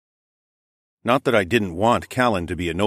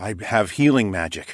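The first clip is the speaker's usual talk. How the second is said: plain reading voice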